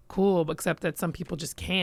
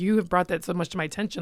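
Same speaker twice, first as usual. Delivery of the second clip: plain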